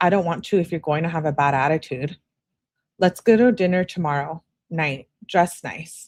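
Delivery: plain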